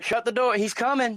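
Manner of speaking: mock freaked-out, high, frantic, panicked urgency. Retelling how the doctor reacted at the birth: imitating a panicked doctor. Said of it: "he was freaking out".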